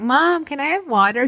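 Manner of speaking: put-on high-pitched little-kid voice. Retelling how the kids ask their parent for something: imitating a kid asking. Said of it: "her kids will come out and like".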